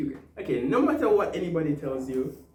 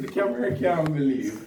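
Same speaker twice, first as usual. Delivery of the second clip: plain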